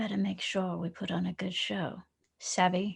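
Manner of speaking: very slow, hushed half-whisper. Voicing a captain telling two crew members to put on a good show: half-whispering in character. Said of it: "turn to, uh, to Chadney and Callison and whisper".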